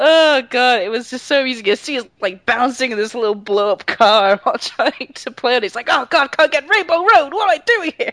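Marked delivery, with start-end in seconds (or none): 5.9-8.1 high, frustrated, raging rant. Describing a man in a little car trying to play a game, imitate someone raging at a game. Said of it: "he was raging at it so much".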